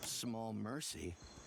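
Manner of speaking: slow, low mutter under the breath.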